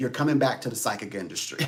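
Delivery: put-on spirit character voice in an Irish accent. Retelling what a spirit said in the dark wood: Irish accent. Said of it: "a spirit with an Irish accent said".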